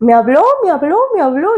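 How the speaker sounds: mock thrilled, sing-song, repeated swooping high exclamations. Retelling shaking someone awake after hearing a voice: retelling own excited words. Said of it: "porque emocionada".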